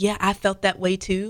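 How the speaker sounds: usual speaking voice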